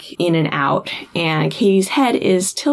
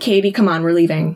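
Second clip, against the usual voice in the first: plain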